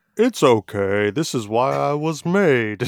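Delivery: loud, swooping put-on cartoon-character voice. Acting out what a lamb in the kingdom would say about being eaten, in a cartoon character voice. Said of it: "If that's what voice they have".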